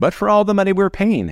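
put-on very high, playful, teasing voice. Answering a question about checking in with students, the speaker is teasing the asker. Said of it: "I'm teasing you".

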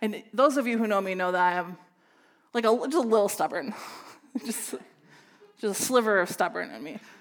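ironic, tongue-in-cheek, downplaying sarcastic tone. Speaking to listeners who know the speaker: sarcastic. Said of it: "I'm being very sarcastic".

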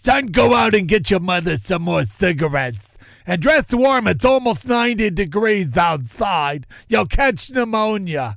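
put-on raspy, heavy-smoker voice with a New Jersey accent. Imagining a mother's reply about Mother's Day, in a Jersey smoker's mom accent. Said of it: "she kind of has this Jersey smoker's mom accent".

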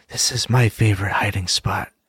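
put-on stage whisper in a small girl's voice. Voicing a little girl in a vision by a tree: whispering little girl. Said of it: "and you hear her whisper".

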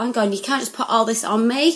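ordinary delivery

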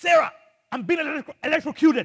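very high, screaming cry. Retelling being electrocuted in the shower, calling out to the wife: reenacting own screaming. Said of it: "And I'm screaming the whole time".

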